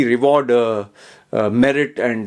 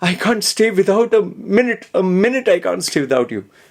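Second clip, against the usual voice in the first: put-on crying, high sobbing voice throughout; 7 semitones higher than usual. Retelling what a man said before marriage, imitating him sobbing. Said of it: "He was crying and sobbing and saying".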